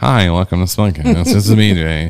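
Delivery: mock awkward, stiff hosting voice. Imitating own awful first podcast episodes: imitating own awkward early podcast intro. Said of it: "our first couple episodes are awful".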